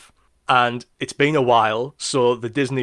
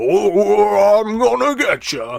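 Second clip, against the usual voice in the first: very high, loud, swooping menacing voice, stretched "oh"; 10 semitones higher, 6 dB louder than usual. Describing Mickey Mouse's nemesis Pete, then imitating Pete. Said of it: "He goes like".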